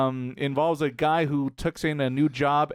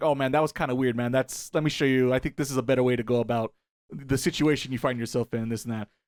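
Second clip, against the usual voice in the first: usual speaking voice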